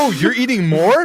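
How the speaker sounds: acted-out, shrill, loud, high-pitched, carrying exclamation. Retelling what she said when the speaker ordered more food: imitating a loud exclamation. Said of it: "And then she said it really loud".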